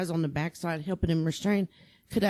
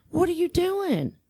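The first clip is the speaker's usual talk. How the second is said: put-on screaming, higher; 11 semitones higher, 4 dB louder than usual. Retelling screaming at an officer who was just standing there: imitating own screaming. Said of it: "I caught myself screaming at him".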